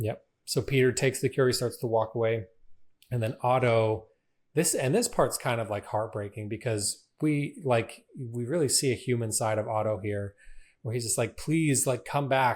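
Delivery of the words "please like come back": put-on wailing, almost crying. Recounting a scene where Peter walks away, acting out Otto wailing, almost crying. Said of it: "He's just like wailing and almost crying".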